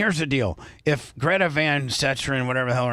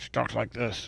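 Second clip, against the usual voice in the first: put-on side-of-mouth talking, quieter; 2 semitones lower, 8 dB quieter than usual. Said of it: "on the side of her mouth".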